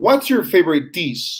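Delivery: pitch ending downward, falling on dish. Modeling a question for learners to repeat, falling intonation on dish. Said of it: "so they can get this pattern of uh, falling intonation".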